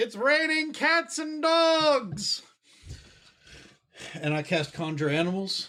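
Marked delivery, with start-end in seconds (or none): 0.0-2.4 shouting, higher. Calling out in character from high in the air: yelling out. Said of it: "I'm gonna yell out something stupid like".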